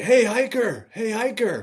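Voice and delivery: mock long, very high, drawn-out yell. Retelling how an old guy by a truck called out: imitating someone yelling. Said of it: "this old guy yells, yells out".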